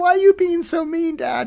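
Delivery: put-on very high, loud, shrill, wailing, tearful child's voice. Father acts out his younger child reacting to a stern voice: imitating a child crying. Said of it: "bursts into tears".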